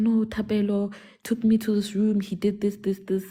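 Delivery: words sobbed out through tears, bawling. Retelling what a girl said in the bathroom: imitating someone bawling. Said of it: "she starts bawling in the bathroom".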